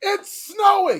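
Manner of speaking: loud, drawn-out high shout.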